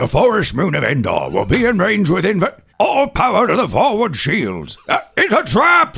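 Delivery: swooping high, alarmed voice. Asked to start with Admiral Ackbar, performing his lines: Admiral Ackbar voice. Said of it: "let's start with, uh, Admiral Ackbar".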